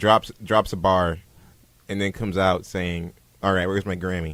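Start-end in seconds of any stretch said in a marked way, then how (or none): none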